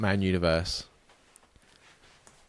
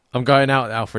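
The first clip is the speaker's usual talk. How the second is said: normal talking voice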